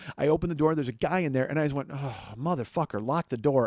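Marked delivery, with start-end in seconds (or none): 1.9-3.7 muttering quietly under the breath, lower and quieter. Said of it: "say it to myself under my breath".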